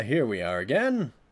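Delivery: ordinary talk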